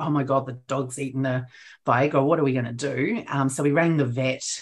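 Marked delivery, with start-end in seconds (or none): none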